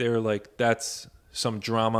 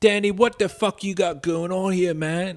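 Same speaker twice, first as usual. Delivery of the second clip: loud, wild, exaggerated British accent; 8 semitones higher, 5 dB louder than usual. Imitating a film character's wild British accent: Don Cheadle's wild British accent. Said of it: "He's like".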